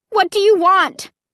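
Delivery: high-pitched cry with fear in it. Narrator, facing the staring horrors and leaning against mother, crying out. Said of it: "I took a deep breath and then cried out".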